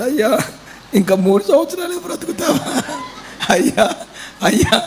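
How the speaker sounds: high-pitched, crying, pleading delivery.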